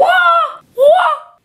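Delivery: very high, shrill, loud outburst of bursting excitement. Reacting to a big winning score, overexcited outburst. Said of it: "I have to contain myself".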